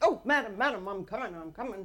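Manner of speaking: put-on heavy Texas accent. Retelling how he answered her shout at the door, in a thick Texas accent. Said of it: "he had the biggest Texas accent".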